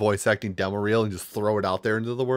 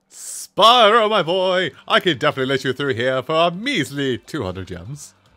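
loud, high, swooping, sing-song cartoon merchant voice; 6 semitones higher, 5 dB louder than usual. Improvising a character line, the speaker's voice drifts into Moneybags voice. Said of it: "it suddenly became money bags".

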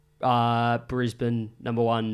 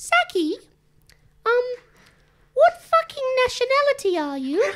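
put-on cartoon pig voice impression; 4 dB louder than usual. Asked for an impression, the speaker questions a friend in the room, Peppa Pig impression. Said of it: "This is Peppa Pig".

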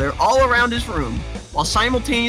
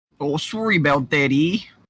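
strong put-on Canadian accent, much lower pitch; 5 semitones lower than usual. Imitating how a man talks, in a strong canadian accent. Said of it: "it's Canadian".

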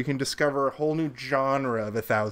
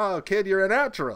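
high carnival-barker pitch; 6 semitones higher than usual. Recounting a movie scene where an accordion salesman hands Al an accordion, carnival-barker voice. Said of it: "He's kind of got like a carnival barker kind of a vibe".

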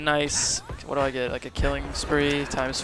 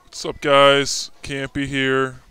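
altered voice pitch, louder; 5 dB louder than usual. Greeting viewers while messing with the pitch of the voice: pitch-shifted voice. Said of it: "I'm messing with, like, the pitch of the voice".

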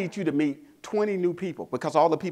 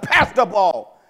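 booming, very loud yelling; 4 semitones higher, 8 dB louder than usual. Retelling a final timeout, calling the team over: retelling own yell. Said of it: "I yell".

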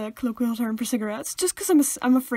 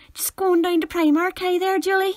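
accent from Derry; 6 semitones higher, 3 dB louder than usual. Joking about how to say Primark: Derry accent. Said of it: "You're clearly from Derry".

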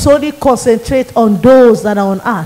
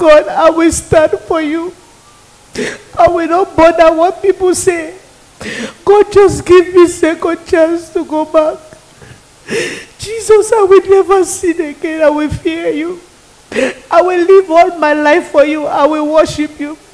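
higher-pitched, tearful, crying pleading voice; 6 semitones higher than usual. Retelling own past plea to God: retelling crying and begging. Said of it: "I was crying. I was begging".

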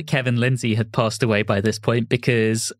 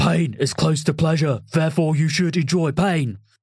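put-on drill-instructor delivery, South London accent; 5 semitones higher than usual. Mocking a performer's South London accent, the speaker imitates a sergeant major. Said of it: "He sounded like my old Sergeant Major".

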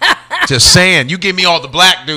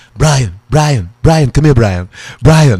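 low and snooty tone; 4 semitones lower than usual. Offering to show the others his cartoon impression: Stewie impression. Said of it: "Want me to do my Stewie?".

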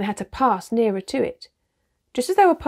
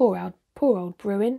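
plain reading voice

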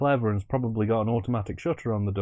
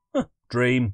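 aggressive, forceful delivery; 2 semitones higher than usual. Voicing old Farmer Johnson waking at the film's end: aggressive. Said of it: "He says it so aggressively".

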